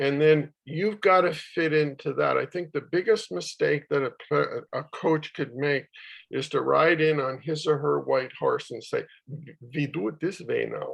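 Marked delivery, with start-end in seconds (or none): 9.7-11.0 clumsy, bad put-on German accent, softer. Imitating a coach making the biggest mistake with a new team, bad German accent. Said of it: "It's not a very good accent there".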